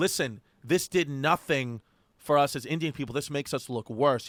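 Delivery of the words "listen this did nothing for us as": ordinary delivery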